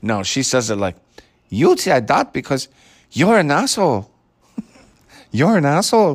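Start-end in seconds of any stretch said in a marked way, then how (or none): 1.5-6.2 put-on Spanish accent, much higher pitch.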